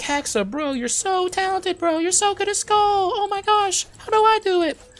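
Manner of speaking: goofy, very high, slow, gushing admiring voice. Streamer imagines a viewer praising his win rate: imitating an admiring viewer. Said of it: "I don't know why I do that voice".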